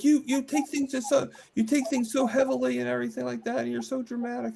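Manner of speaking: very high, heated, angry delivery. Retelling what a roommate said back after getting really mad: imitating someone talking angrily. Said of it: "really mad".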